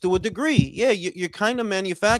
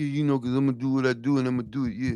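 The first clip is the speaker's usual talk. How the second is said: put-on stuttering voice, lower in pitch; 7 semitones lower, 3 dB quieter than usual. Mocking the way a boxer talks: imitating Boots's stutter. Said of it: "Got that stutter like".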